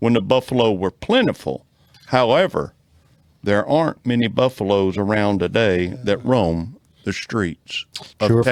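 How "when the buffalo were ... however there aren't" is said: usual speaking voice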